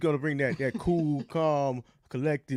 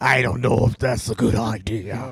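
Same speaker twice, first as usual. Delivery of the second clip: deep, loud, really scary man voice; 4 semitones lower, 6 dB louder than usual. Answering a flirty invitation while playing Lady Aberlin: sounding like a really scary dude. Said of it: "why do you sound like a really scary dude".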